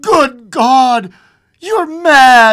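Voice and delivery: horrified, aghast shriek, very high and very loud. The old man answers his wife's plea to get it and wish: crying out, aghast. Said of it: "he cried, aghast".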